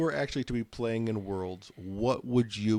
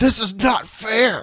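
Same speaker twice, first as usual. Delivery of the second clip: very loud, very slow, high, drawn-out furious cry; 12 semitones higher, 12 dB louder than usual. Teasing the other speaker about being a rebellious Jedi: angry Anakin impression. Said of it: "getting all angry and being, pulling an Anakin going".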